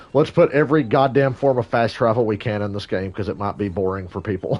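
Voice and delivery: ordinary delivery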